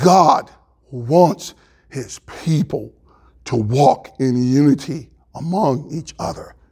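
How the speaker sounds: slow, deliberate, each word carefully laid out. Speaker asks fellow Christians to really hear them: slow and quiet. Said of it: "Let me say it slowly and quietly".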